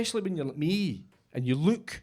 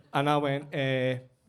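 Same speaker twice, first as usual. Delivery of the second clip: plain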